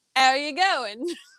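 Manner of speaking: sounding cockney. Asked to just say the phrase, the speaker says it in a cockney accent. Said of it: "Now you sound cockney".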